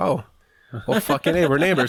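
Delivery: put-on boyish voice from before it broke. Retelling meeting another boy at the school bus, imitating his unbroken boyhood voice. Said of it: "why did you sound like that?".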